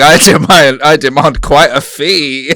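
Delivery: put-on very slow, grandly drawn-out, tipsy boastful tone. Mocking a friend who lost his mind after one sip: imitating a tipsy brag. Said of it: "he started going".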